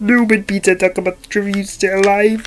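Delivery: nasal cartoon frog puppet voice. Having decided to keep going this way, the speaker carries on in Kermit the Frog voice. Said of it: "do the rest of this in Kermit the Frog".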